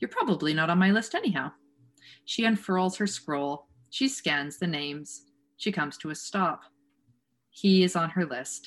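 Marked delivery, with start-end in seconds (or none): 0.0-1.5 bright, upbeat, sing-song, cheery voice. Reading a story aloud, voicing the hag sparing a ferryman: upbeat, almost cheery voice. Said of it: "She speaks in an upbeat, almost cheery voice".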